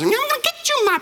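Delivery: very high, shrill witch voice. Comparing the idea to the Wizard of Oz: Wicked Witch voice. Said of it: "the Wicked Witch and the Wizard of Oz".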